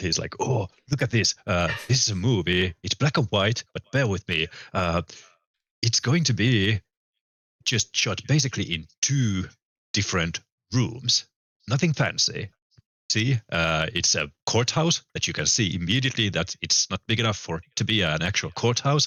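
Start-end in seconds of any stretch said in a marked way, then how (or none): 0.4-12.5 acted excited, mock-enthusiastic tone. Imitating a man who eagerly shows you a sixties film; mock-enthusiastic. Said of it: "he's like real enthusiastic about it".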